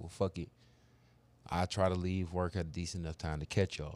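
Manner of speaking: ordinary talk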